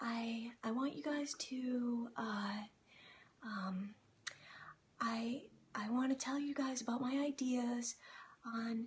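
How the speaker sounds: meek, very soft, very slow, stumbling and hesitant. Speaker showing an audience a weak way of presenting ideas, soft-spoken and hesitant. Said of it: "I was kind of talking like this".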